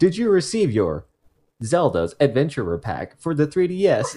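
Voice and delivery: recorded, automated customer-service phone-system voice. Retelling calling Amazon about a pack never received, Amazon automated phone voice. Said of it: "they have this automated voice thing".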